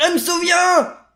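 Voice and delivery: very high, loud shouted outburst. In a read-aloud story, a character suddenly cries out, shouting. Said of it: "Mais pourquoi tu cries comme ça?".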